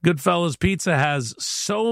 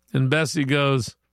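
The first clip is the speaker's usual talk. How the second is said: ordinary delivery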